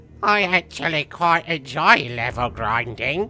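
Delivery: put-on British accent. Reading out what Rio says, as Rio, in a put-on British accent. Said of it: "here's my impression of Rio. ... Because he's a little British".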